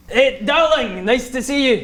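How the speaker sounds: put-on Scottish accent. Voicing a character met from Darkwood, use a Scottish accent. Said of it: "In a perfect Scottish".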